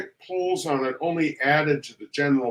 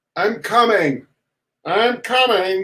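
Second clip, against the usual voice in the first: slow, drowsy, high, drawn-out wail; 6 semitones higher, 6 dB louder than usual. Narrator reads a sleeper woken by battering on the attic door, slow, sleepy wail. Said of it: "he wailed in a slow, sleepy voice".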